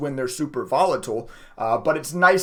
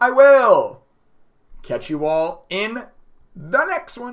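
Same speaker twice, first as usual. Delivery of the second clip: voice breaking mid-phrase, cracking and pitched up; 7 semitones higher, 5 dB louder than usual. A video host signs off to viewers, voice cracking. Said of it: "Oh, voice crack".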